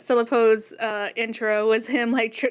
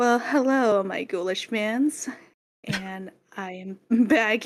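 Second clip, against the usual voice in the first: put-on, slow, posh, hoity-toity voice. Voicing a character addressing her camera, putting on a toity act. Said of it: "putting on that toity act that she is known for".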